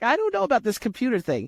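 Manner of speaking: put-on high, female Brooklyn New York accent. Recounting a Brooklyn woman who wanted a podcast, imitating Barbara's New York accent. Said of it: "New York accent".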